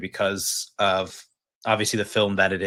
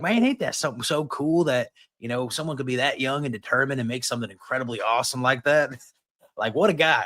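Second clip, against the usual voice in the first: put-on Kentucky country accent; 4 semitones higher than usual. Retelling his dad's reaction on the phone, imitating dad's Kentucky accent. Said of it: "is your dad from Alabama?".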